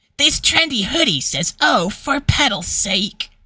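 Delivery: high, cartoonish voice. Quoting a hoodie's catchphrase as an attempt at Flower's voice. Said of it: "That's my attempt on Flower's voice".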